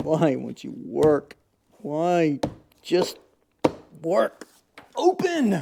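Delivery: a little emotional, swooping and drawn out. Wrestling with a convertible top that won't work, a little emotional. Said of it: "I'm a little emotional".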